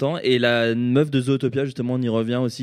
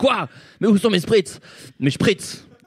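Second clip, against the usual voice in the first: high-pitched, indignant, petulant diva-style ranting outburst; 8 semitones higher than usual. Explaining how the speaker asks for things, imitating Jean-Pierre Mocky's outburst. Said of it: "je suis pas Jean-Pierre Mocky qui balance la table et qui dit".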